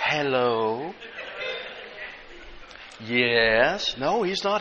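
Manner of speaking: put-on, hushed, whispery, polite phone voice, drawn-out "yes". Describing how their mother answered the phone, imitating mother's phone voice. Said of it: "then she had her phone voice".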